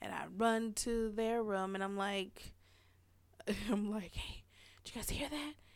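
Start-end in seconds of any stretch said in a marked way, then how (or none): 3.5-5.5 whisper, much quieter. Retelling running to their room after hearing a noise in the house, whispering. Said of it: "So I'm whispering".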